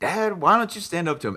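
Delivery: loud, high, distressed voice. Retelling a movie scene where Marty confronts his dad: imitating upset Marty. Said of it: "Marty is understandably upset".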